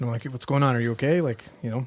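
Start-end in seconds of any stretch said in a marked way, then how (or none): none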